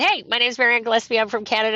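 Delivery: ordinary talk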